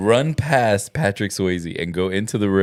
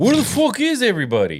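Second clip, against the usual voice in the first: very high, quick shout with big swooping pitch swings; 13 semitones higher than usual. Mocking an actor's bad delivery of a movie line: imitating Conor McGregor. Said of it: "when he was like".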